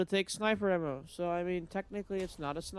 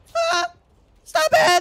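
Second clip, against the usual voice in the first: cracking yelp, very high and very loud; 12 dB louder than usual. A gamer, about to die in the game, cries out, voice cracking. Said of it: "My voice cracked".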